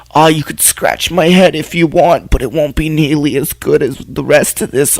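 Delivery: put-on elderly woman character voice. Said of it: "I like your dog's voice that you give him".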